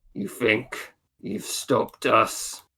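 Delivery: masked, bronze-tinged giant voice. Voicing a giant floating figure in a war mask: Ingvar's giant form speaking. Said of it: "And it says".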